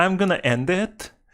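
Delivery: put-on high-pitched Valley Girl voice. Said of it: "a Valley Girl type of accent".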